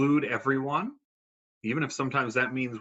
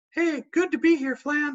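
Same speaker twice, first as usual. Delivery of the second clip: very high, loud, excited, bubbling-over puppet voice; 5 dB louder than usual. Introducing a puppet to third graders: excited puppet voice as Peyton. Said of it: "she's always very excited".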